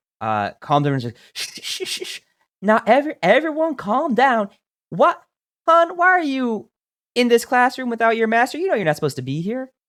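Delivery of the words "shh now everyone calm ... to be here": put-on Southern female voice, much higher, louder. Voicing an instructor calming down a class, in a southern accent. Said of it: "And she is Southern now".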